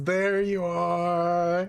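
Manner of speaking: amused laughing delivery with stretched-out "are". Voicing a character who finds an opponent: laughing while speaking. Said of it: "she kind of laughs and says".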